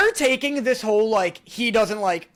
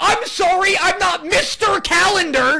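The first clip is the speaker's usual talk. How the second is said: very high, shrill, snappish, snappy, angry tone; 9 semitones higher, 4 dB louder than usual. Speaker acting out their own reply to being corrected about the weekday, mock-angry snappy retort. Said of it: "And you're like".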